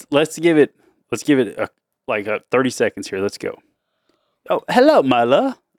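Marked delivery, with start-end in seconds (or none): 4.5-5.5 put-on British accent, much higher. Playing a prince in pretend play, greeting Myla, in a British accent. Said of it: "we were talking in British".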